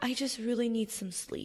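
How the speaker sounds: gentle, tame, very hushed, calm voice. Acting out the inner voice that tells you what you need, calm and tame. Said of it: "the most tame and beautiful and, and, and calm voice".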